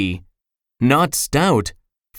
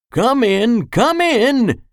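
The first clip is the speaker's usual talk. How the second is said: put-on high, slow, wheezing voice; 8 semitones higher than usual. Narrator voicing the doctor greeting a knocking visitor, wheezing. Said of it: "He wheezed".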